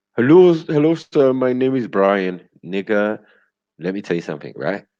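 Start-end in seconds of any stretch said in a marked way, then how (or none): 0.2-2.5 high, loud put-on Indian accent. Mocking a call-centre worker in Delhi pretending to be in London: imitating Delhi call-centre accent. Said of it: "there's nothing name sound like Brian in your voice".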